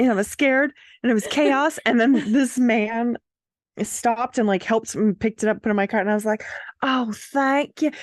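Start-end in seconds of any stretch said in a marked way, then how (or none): 6.8-7.9 put-on sudden Southern accent, pitched up. Retelling thanking a man who helped pick things up, in a southern accent. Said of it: "I responded in a southern accent out of nowhere".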